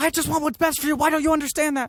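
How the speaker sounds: put-on mild yelling. Retelling a film scene, a father speaking to his son: imitating someone yelling a little. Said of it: "he's also yelling at his son a little".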